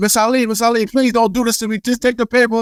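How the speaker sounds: high, screamed, desperate, put-on pleading yell. Retelling chasing someone down the block to serve papers: retelling own screaming plea. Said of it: "and I'm screaming".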